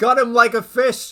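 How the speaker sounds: booming, very loud shout in a character voice. Voicing a character cheering a teammate's attack: shouting in character. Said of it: "Drazen just shouts".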